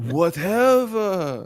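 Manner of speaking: slow, bored, uncaring French voice. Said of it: "very slow and French".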